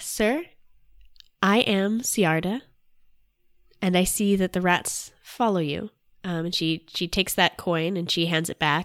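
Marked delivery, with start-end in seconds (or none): 0.0-5.9 half-whispery stage whisper throughout. Storyteller voicing Ciarda addressing a man, in a very quiet half-whisper. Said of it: "she's dropped to a very, very quiet whisper".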